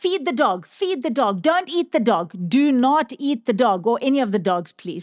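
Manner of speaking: called out, urgent but contained. Recalling the grandmother's phone call to a lady, retelling own screaming. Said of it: "And I was like screaming".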